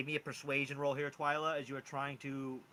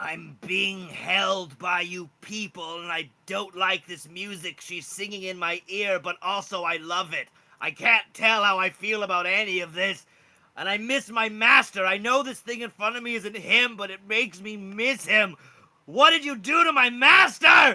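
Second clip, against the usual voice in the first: very loud, high, booming, unhurried dragon voice; 5 semitones higher, 15 dB louder than usual. Voicing a captive dragon answering a player who speaks to it: voicing the dragon. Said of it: "The dragon is like".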